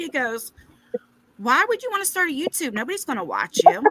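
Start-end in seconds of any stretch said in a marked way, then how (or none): 1.4-3.9 dead serious, earnest, no joking. Retelling a son's reply to starting YouTube: imitating Tyler, very serious. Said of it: "And he was so serious".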